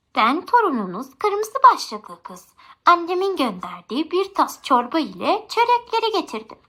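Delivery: thinned-out, disguised voice. Narrator voicing the wolf at the grandmother's door, posing as her grandchild: thinned voice. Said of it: "Sesini incelterek".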